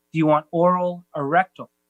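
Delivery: plain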